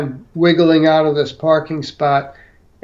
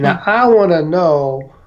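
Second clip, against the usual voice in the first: put-on, odd-sounding Southern accent. Retelling what a special agent said on the phone: imitating Special Agent Gregory's odd Southern accent. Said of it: "he had this odd Southern accent".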